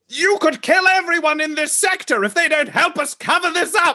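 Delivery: shrill, very high, frantic yelling. Narrating a scene in which Valentine yells: Valentine yelling. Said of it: "Valentine's yelling like".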